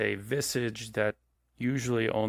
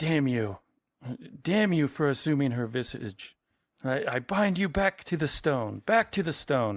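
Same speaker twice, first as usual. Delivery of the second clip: high, emphatic, exclaiming outburst; 5 semitones higher than usual. Telling the group what they hear from inside: Doctor Call shouting. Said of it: "hear Doctor Call shouting from inside".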